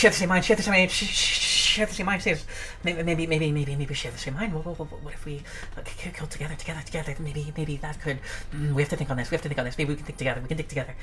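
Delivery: frantic, rushing, very hushed, low manic whisper. Game master voices the whispers a player hears, fast manic whispers. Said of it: "the whispers kind of they, they get faster and like more more manic".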